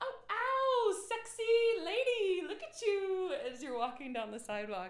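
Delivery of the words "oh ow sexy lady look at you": hooting holler, very loud, shrill, slow and drawn-out. From the roof, the speaker reenacts calling to you on the sidewalk, retelling a yell. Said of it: "I'm yelling".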